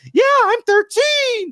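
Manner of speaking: very high, put-on child's voice. Imagining an actor joking about his age: fake kid's voice. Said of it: "a fake kid's voice".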